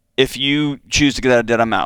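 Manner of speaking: ordinary delivery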